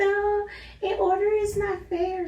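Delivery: very high, protesting voice. Retelling what Stephanie said about ranking in order: Stephanie voice. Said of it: "That's my Stephanie voice".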